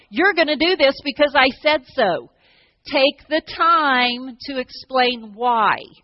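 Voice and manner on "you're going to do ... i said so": usual speaking voice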